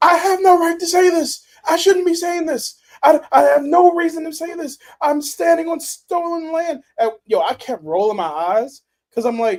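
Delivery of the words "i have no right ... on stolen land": put-on very high, childlike little-girl yell. Recalling a protest moment, imitating a girl yelling. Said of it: "that little girl was yelling".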